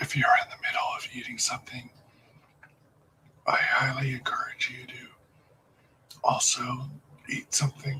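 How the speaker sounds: very quiet, soft ASMR whisper. Live-streaming to viewers in ASMR mode, whispering. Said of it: "I'm now in a whispered voice".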